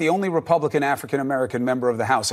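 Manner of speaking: said too fast, rattled off.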